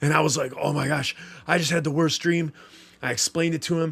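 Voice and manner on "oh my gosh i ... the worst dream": put-on breathless speech, quieter. Retelling explaining a nightmare to Kyle, imitating being out of breath. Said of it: "I'm still out of breath".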